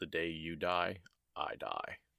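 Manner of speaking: quiet, plain, simple put-on deadpan delivery. Speaker quotes Lan's response, retelling it in Lan's deadpan delivery. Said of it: "Just very simple, deadpan".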